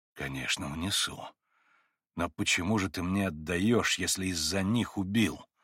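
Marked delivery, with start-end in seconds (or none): none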